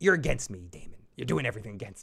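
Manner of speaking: imitated, acted-out scolding tone. Retelling a scene where she turns on Daemon: imitating a dressing-down. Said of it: "She dresses him down".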